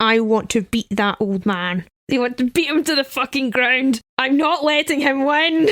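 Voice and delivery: acted, tense speech through gritted teeth. Recalling his reply after being told he could stop playing: retelling a gritted-teeth vow. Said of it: "I grit my teeth and said".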